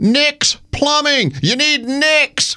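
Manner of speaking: pretend yell, high, slow and drawn out.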